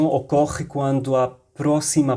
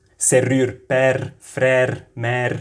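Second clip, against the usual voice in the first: Lebanese accent in French. Asked to say a french word with a lebanese accent: lebanese accent. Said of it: "tu dizes serrure com um sotaque mais libanês?".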